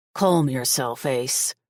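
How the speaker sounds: gruff, rough voice. Reading a story aloud, a newcomer telling Ace to calm down: gruff voice. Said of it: "a gruff voice says".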